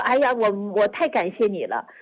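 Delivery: ordinary talk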